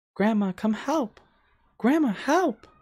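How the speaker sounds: put-on very high small child voice, calling out. The narrator voices a girl calling for her grandma from a tent, little girl voice. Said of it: "you can hear the voice of a little girl".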